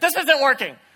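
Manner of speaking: mock angry voice. Retelling how she complained while spinning in the kayak: imitating someone getting mad. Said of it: "she would get mad, and she would look at me and lovingly say".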